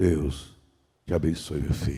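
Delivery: very deep, soft, gentle, unhurried, drawn-out voice. Son recalling his father's last blessing before the hospital, imitating a deep, gentle, slow voice. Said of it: "com a voz grossa e mansa e devagar".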